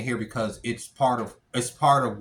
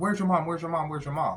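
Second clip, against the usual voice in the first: put-on panicked pleading voice, higher; 5 semitones higher than usual. Retelling a mother running up in a panic: imitating a panicked mother. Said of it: "his mom comes running up to us in a panic".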